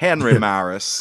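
exaggerated put-on American accent. Saying a name as an impression of an impression: exaggerated American accent. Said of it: "That's me doing an impression of the Tufty Club's impression of an American".

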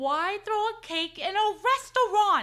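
shrill, loud outburst. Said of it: "You have to say it like that".

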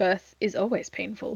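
emotionless, flat, matter-of-fact deadpan delivery. Quoting a doctor's line the way he delivered it: mock-deadpan delivery. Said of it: "it's just so deadpan".

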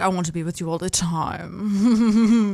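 put-on thick British accent, very slow, drawn out. Retelling an overheard phone call: thick British accent. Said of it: "those thick British accents".

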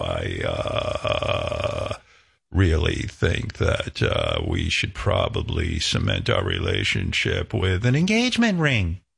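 very low, froggy, up-and-down creaky vocal fry. Explaining what it is, a speaker demonstrates a woman talking in vocal fry. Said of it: "it's like this up and down froggy".

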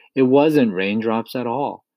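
ordinary delivery, nothing marked

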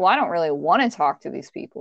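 plain

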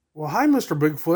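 ordinary talk, nothing marked

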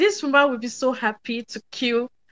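ordinary talk

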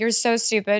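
normal talking voice

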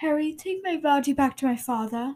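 put-on speaking with British accent. Quoting Cedric's line to Harry: British accent. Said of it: "In the British accent".

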